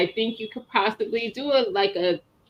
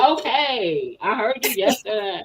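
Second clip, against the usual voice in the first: unhurried pace, okay drawn out long. Showing how one would have said it the way the other speaker did: imitating a friend's delivery. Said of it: "I absolutely would have said it the way Tia said it".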